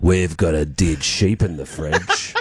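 very low, eerie, creepy, spooky voice. Retelling what the sister told the checkout lady, in a very spooky voice. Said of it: "in a very spooky voice".

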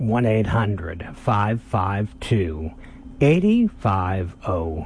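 spoken slowly. Repeating a phone number for listeners, saying it slower. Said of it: "So I'll say it just slower".

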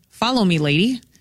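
ordinary talk

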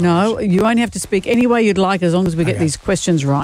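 plain

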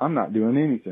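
unbothered, offhand bear voice. Voicing a bear caught in the garbage: imitating a nonchalant bear. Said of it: "looked over at me very nonchalantly".

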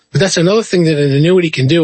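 ordinary talk

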